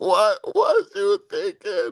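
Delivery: slow, high mock disbelief.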